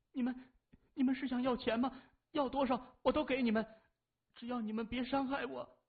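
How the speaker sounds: quavering, trembling voice pitched very high. A frightened woman speaks to men who came to collect Mafeng's debt; trembling voice. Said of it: "颤声说".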